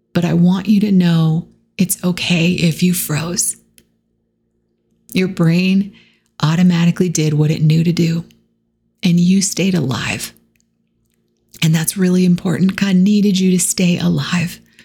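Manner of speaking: choked up, shaking voice, close to tears. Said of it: "getting choked up and literally shaking right now".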